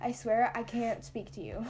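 ordinary talk

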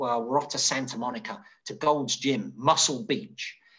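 normal talking voice

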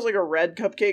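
plain

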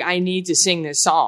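normal talking voice

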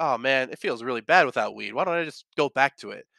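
normal talking voice

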